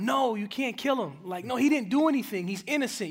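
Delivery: mild, exclaimed outburst, like a shout. Recalling reading the Bible in a jail cell, retelling a shout. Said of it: "I just shouted out".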